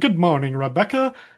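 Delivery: put-on British accent. Recapping Sam giving up and greeting someone, in Sam's faux British accent. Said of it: "he kind of puts on his faux British accent".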